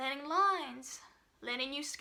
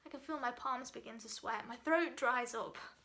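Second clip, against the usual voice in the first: ordinary delivery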